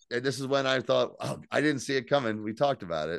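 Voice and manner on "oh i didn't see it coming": plain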